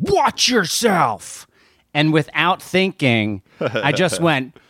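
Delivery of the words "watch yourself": yelled, high pitched. Retelling what a man zooming past in a bike lane yelled, retelling a yell. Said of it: "yelled at me".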